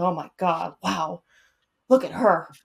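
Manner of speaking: fatherly dad voice. Retelling what dad says when he gets going: imitating dad. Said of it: "he's like".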